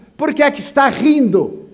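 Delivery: loud, high-pitched shout from a distance. Retelling how a man in a queue shouted from far away: imitating someone shouting. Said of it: "me olha de longe e grita".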